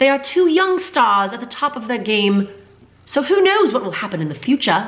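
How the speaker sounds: clumsy put-on British accent. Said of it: "That was a terrible accent".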